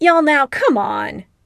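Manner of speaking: protesting, groaned out. Narrator reads a friend's reply to teasing on a Skype call, groaning. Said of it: "Eric groans".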